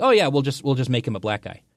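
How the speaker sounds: ordinary delivery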